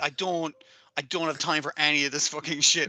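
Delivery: put-on disgusted tone. Retelling a character's reaction to the others' friendly drama: imitating a disgusted character. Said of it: "She's just there disgusted by all this".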